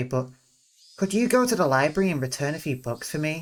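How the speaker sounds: ordinary delivery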